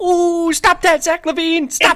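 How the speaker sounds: mock, very high, shrill yell. Describing a basketball broadcast, imitating Stacey King yelling down the bench. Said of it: "you hear Stacey King just yelling, like".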